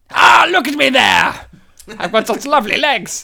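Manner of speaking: grandly boastful, loud, self-admiring commentator voice. Describing Brian Blessed's Flash Gordon commentary, doing a Brian Blessed impression. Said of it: "basically him being like this".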